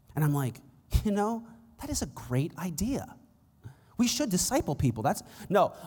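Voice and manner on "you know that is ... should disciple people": tongue-in-cheek, insincere, sarcastic tone. Retelling a reply to people asking about discipleship: retelling a sarcastic reply. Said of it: "I'm being sarcastic".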